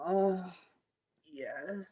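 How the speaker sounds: sensual pleasure moans. Telling listeners to move blocks in the body, the speaker demonstrates orgasmic moaning. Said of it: "I'm talking orgasmic moaning if you need to".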